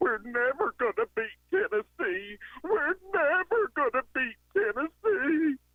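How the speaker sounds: very high voice, weeping in despair. Retelling what a crying friend said after the game: imitating a friend crying. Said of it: "as he just cried his eyes out".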